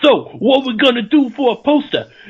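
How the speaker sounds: New York mob boss voice. Acting out poster makers talking: New York mob boss voice. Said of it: "like a New York mob boss".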